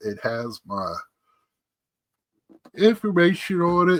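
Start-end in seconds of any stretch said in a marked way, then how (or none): 2.8-4.0 high-pitched talking through a yawn. Describing a package that came in the mail, speaking while yawning. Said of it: "Sorry, I'm yawning".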